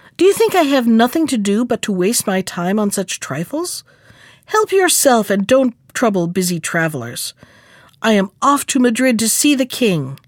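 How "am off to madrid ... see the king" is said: ordinary delivery, nothing marked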